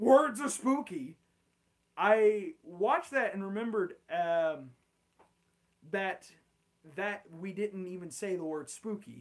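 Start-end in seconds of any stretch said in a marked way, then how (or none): 0.0-1.2 sudden, loud, high-pitched shouted outburst. Retelling own words from earlier: retelling a yell. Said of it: "and then I just yelled".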